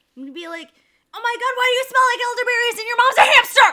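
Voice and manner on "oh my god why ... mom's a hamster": very high, shrill, very loud, taunting yelling. A tabletop player casts Vicious Mockery on their turn, yelling insults. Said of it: "I'm gonna yell horrible things".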